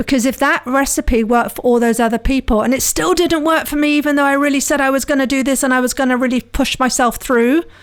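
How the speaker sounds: tense, strained, pushed-through stressed delivery. Acting out the thoughts of someone whose plan failed again: stressed voice. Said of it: "hear the stress in my voice there".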